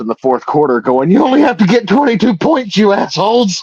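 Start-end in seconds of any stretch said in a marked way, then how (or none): 1.1-3.6 mock very high-pitched screamed outburst. Retelling watching a losing game on the phone: retelling screaming at a phone. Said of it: "sitting there screaming at my cell phone".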